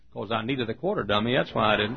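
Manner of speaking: usual speaking voice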